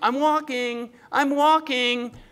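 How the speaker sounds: acted drawn-out high yell. Acting out a lame man carried in a blanket: imitating someone yelling. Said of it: "he's yelling out from this blanket".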